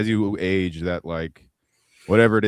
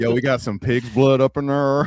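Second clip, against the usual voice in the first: put-on louder, higher Oakland accent; 6 semitones higher, 4 dB louder than usual. Joking around in a group conversation, trying a put-on Oakland accent. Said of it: "I was gonna try to do an Oakland accent".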